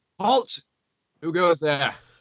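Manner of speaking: stern, severe tone. Narrating a voice calling out to approaching travelers: stern voice calling out. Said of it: "a stern voice call out".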